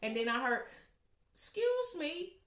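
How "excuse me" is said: put-on tiny, very high little old lady voice. Retelling being interrupted mid-crescendo, the speaker imitates a little old lady's soft voice. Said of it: "with a little soft voice".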